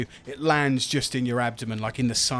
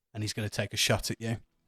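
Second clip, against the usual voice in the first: plain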